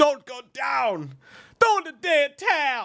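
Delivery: very high, very slow, drawn-out coach yelling. Talking about a movie trailer, speaker acts out Apollo's coach; yelling like Apollo's coach. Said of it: "Apollo's coach yelling".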